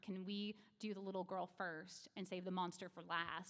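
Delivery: ordinary talk, nothing marked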